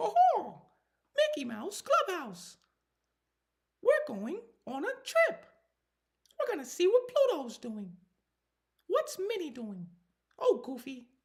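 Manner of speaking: loud, very high sing-song voice. A dad recalling performing the show for her, in a Mickey Mouse voice. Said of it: "I can do the Mickey Mouse hard".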